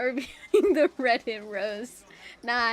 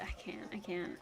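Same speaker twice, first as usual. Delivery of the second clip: normal talking voice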